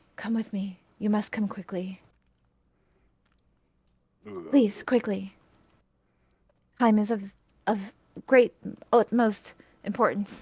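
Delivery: somber elf voice, solemn, mournful and urgent. Game master voices a somber woman who walks in: very soft voice. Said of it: "she kind of very softly says".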